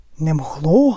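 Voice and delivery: trembling voice. Narrator reads a character's reply as spectators watch a match, trembling voice. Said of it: "сказав тремтячим голосом Хагрід".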